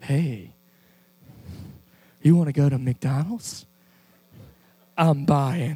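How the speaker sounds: affected flirty phone voice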